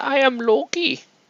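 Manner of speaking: very high voice with a bad German accent. Greeting while painting a Loki figure: Loki voice with German accent. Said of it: "me not having a good accent".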